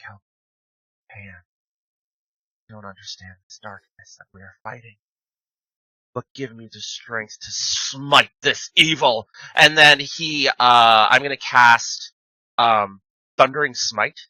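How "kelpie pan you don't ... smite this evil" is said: fast, low, half-whispered under the breath. Playing a swordsman facing a dragon, the speaker half-whispers a prayer. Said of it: "he whispers a prayer".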